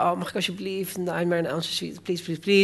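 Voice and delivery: soft, put-on pleading voice. Recalling begging mother at age seven to watch a film on TV, retelling begging mother. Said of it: "En ik smeekte mijn moeder".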